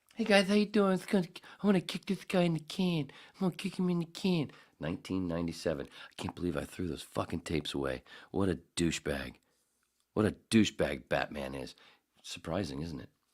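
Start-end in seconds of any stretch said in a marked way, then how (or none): 0.2-4.5 very high, squeaky voice. Recalling being put on the air, doing a voice: Mike Tyson voice. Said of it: "Or I was doing Mike Tyson".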